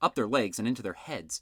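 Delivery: ordinary delivery, nothing marked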